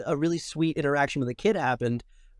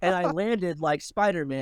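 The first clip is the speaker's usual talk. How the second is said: ordinary talk, nothing marked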